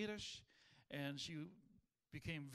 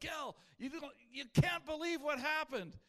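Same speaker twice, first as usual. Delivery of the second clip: thrilled, very high and very loud excited burst; 9 semitones higher, 8 dB louder than usual. Speaker retelling Daryl's phone call to him, imitating Daryl's excitement. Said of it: "He's all excited".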